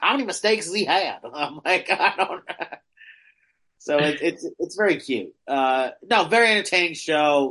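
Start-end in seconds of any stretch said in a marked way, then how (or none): 0.0-1.2 put-on thick, laid-on Florida accent. Retelling a question from a woman behind them at a show, thick Floridian accent. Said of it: "this woman with a thick Floridian accent goes".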